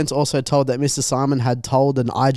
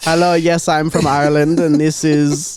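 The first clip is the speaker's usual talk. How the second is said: mock Indian accent, higher; 3 semitones higher, 3 dB louder than usual. Imagining a call from an indian call center guy: imitating an indian call center guy. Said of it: "an Indian call center guy".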